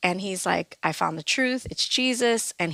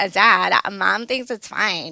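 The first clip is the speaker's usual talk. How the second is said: put-on sassy teenage tone; 5 dB louder than usual. Retelling answering her dad about dating at thirteen, imitating her sassy teen self. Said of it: "I was pretty sassy".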